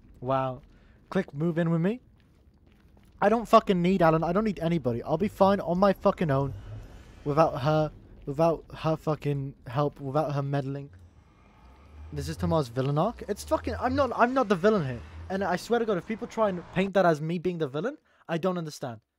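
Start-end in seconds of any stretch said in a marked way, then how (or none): none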